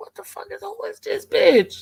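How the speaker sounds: high, hushed half-whisper, under the breath. Retelling a half-whispered question to a companion: retelling a half-whisper. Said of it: "So I'm whispering Miss Pam".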